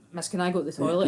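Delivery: ordinary talk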